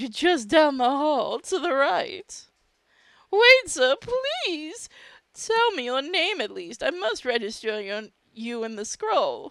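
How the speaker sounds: flamboyant camp voice, high and drawn out.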